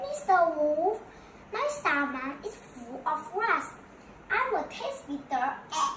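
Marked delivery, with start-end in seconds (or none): none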